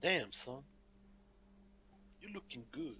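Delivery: very soft, breathy whisper spoken up close. A player's character walks up to a man's ear, whispering. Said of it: "he's walking up to his ear and just whispering it".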